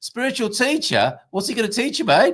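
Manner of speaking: put-on Australian accent, pitched very high. Quoting a man's reply in a retold exchange, Australian accent impression. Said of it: "I'm not just doing an Australian stereotype".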